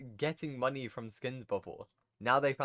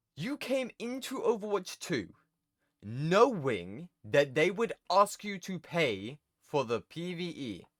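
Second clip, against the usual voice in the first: angry, heated rant with voice pitched up; 5 semitones higher than usual. Ranting at players about paying for the PvE, getting mad. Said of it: "I'm actually getting mad now".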